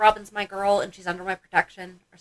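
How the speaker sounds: normal talking voice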